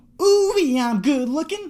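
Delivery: very high, slow, drawn-out, lingering, unhurried delivery. Showing a movie collection, doing a John Travolta impression. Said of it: "That's my John Travolta impression".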